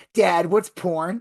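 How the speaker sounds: put-on loud, blurted-out child voice. A dad retells what his seven-year-old son asked: imitating son asking loudly. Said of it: "my son starts asking loudly".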